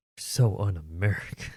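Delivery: sarcastic delivery. Teasing another speaker for not liking cheeseburgers: sarcastic. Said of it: "how sarcastic I'm being".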